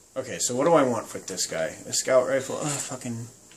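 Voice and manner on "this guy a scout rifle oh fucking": normal talking voice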